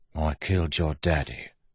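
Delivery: soft, hushed, softly spoken. A man confesses to a woman while looking at her father's picture, softly. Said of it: "Wayne said softly".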